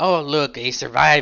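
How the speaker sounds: slow, sarcastic drawl. Narrating a story, reading a character's line as he draws a stiletto, sarcastic. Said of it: "Rook says sarcastically".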